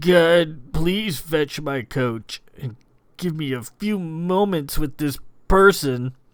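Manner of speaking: throttled, squeezed-out words, strangled and choked. A man speaks down into the stony ground before a guard, in a strangled voice. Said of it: "spoke in a strangled voice".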